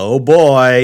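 put-on, very loud, sarcastic uh-oh tone. Speaker retells their mother's reply when asked to mute the game, imitating her sarcastic tone. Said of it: "in kind of like a sarcastic way".

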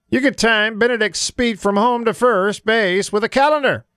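weak, high announcer voice. Quoting a listener's classic Skip Caray line, in a Skip Caray impression. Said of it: "best Skip Carey impression I could muster".

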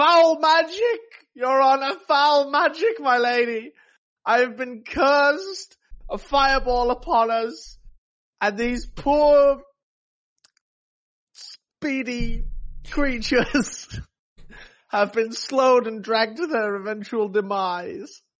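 very high, wailing fake sobs and shout. In character, shouting to the Lady Rowan with crocodile tears: fake crying and shouting. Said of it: "start crying crocodile tears and shout".

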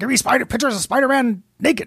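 acted gruff newspaper editor voice. Joking about J K Simmons on the show: J. Jonah Jameson voice. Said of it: "that was a pretty good J. Jonah Jameson".

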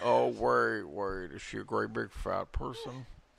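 rough, raspy, creaky put-on voice. Repeating the impression after another speaker's attempt: Buffalo Bill impression. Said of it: "I wanted you to talk like Buffalo Bill".

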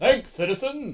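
high, overblown superhero voice full of bravado. Imitating the film's superhero lead: Captain Underpants superhero bravado. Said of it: "a stereotypical superhero kind of bravado".

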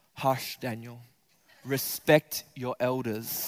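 deliberately calm, slow, measured put-on hush. Retelling what a man would say to Daniel mid-fight, put-on calm voice. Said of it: "He would put on a really calm voice like this".

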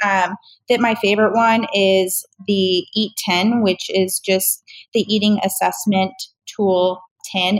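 slow, careful, slowed-down delivery.

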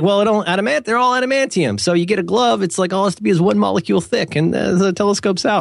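put-on New York accent. Quoting a man he is describing, in a New York accent. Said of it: "I think New York accent".

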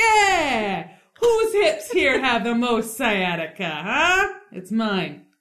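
very slow, drawn-out delivery. Retelling how a guy bursts into the brothel bar: acting out a guy bursting into a bar. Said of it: "bursts into the brothel bar and is like".

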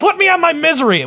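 shrill, very high-pitched screaming. Retelling how the other speaker interrupted him: imitating someone screaming.

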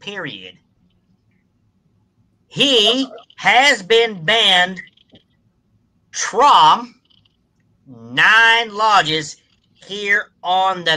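Deep South Mississippi accent. Reading a letter aloud as asked: Deep South Mississippi accent. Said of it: "do your best impression of a Deep South Mississippi voice".

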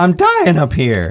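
voice cracking and breaking. Saying a show's title the way it has to be said, voice cracking. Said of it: "you got to have your voice crack when you say it".

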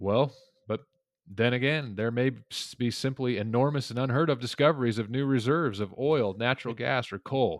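dripping with heavy sarcasm. Explaining an author's argument about fuels, quoting his aside: acting out sarcasm. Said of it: "And very sarcastically".

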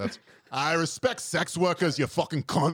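put-on Scottish character accent. Speaker slips into their own character for the others: woke Scottish character voice. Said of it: "my woke Scottish character".

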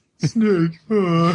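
put-on pretentious, snooty Connecticut-style Ivy League delivery. Mocking the other speaker's impression with a McDonnell Miller impression. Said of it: "I'm not saying I did it right".

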